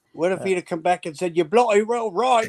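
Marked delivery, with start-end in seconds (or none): 1.4-2.5 put-on English accent, said with relish. Telling of meeting an Englishman in Ontario, imagining his reply in an English accent. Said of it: "Good accent".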